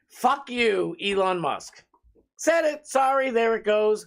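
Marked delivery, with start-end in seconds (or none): 0.1-1.8 slow, heated, furious, steaming outburst. Ranting against a public figure after saying he is heated: angry. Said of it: "I am heated".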